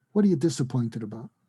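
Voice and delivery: plain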